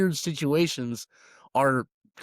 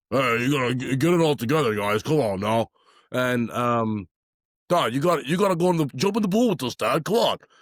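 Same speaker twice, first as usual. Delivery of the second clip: put-on cartoonish big guy voice. Describing a show's three giant twin brothers, imitating how they all talk. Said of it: "they all talk like this".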